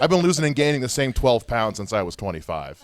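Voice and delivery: ordinary talk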